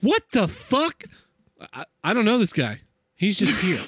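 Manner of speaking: incredulous, bewildered, swooping, baffled disbelief. Speaker acts out Janine's reaction to the shouting stranger, imitating Janine, mock-baffled. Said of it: "She's like".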